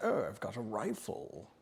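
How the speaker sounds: very slow, drawn-out British gentleman voice. Imitating a friend who talks like this while hunting: imitating Barnaby's British voice. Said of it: "he talks like this".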